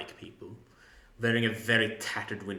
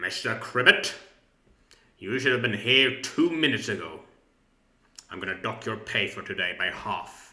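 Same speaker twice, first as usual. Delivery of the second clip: put-on loud, strict, stern older man voice; 5 dB louder than usual. Voicing an employer scolding a late worker: stern older man's voice. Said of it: "the voice of a stern older man".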